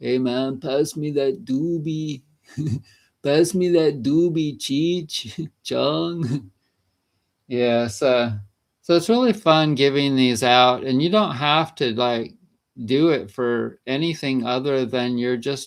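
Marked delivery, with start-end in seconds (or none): 0.0-6.5 put-on full stoner Mexican accent. Speaker showing an impression he says he could probably do: Cheech Marin impression. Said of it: "doing Mexican accents like a, some kind of a weed thing".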